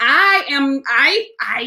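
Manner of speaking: very slow, stuttering restart stammered on I. Addressing two listeners laughing at them, about to explain, stuttering. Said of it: "I'm stuttering because".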